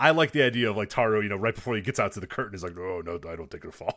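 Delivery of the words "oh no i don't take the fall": low, soft, mock disgusting-sounding voice. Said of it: "in his, his disgusting voice".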